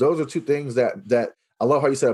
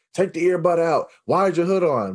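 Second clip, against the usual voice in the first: put-on high-pitched, mild hollering; 5 semitones higher than usual. Acting out how we scream at a kid in the hallway, imitating screaming at a student. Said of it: "we're screaming and hollering".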